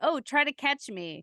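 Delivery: put-on slow, drawn-out little kid voice. Retelling how Charlotte starts her game, imitating Charlotte. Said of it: "she's like".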